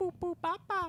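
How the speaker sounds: put-on high, loud, squealing baby voice.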